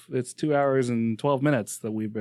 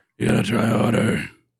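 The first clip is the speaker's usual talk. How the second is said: acted rough gravelly voice; 4 dB louder than usual. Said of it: "try harder to get the gravelly voice".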